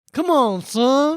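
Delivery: put-on over-the-top Texas accent. Quoting a movie dad's line: imitating an over-the-top texas accent. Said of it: "unbelievably over the top Texas accent".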